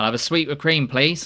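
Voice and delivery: high, loud voice pushed through the nose. A narrator voices Snell at the counter, in a nasal Snell voice. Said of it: "Snell says nasally".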